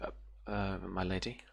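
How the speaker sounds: stammering. In a role-play, her character addresses a lady: stuttering out. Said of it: "she kind of stutters out".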